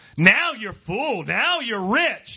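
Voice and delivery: sing-song sarcasm. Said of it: "There's some of that sarcasm".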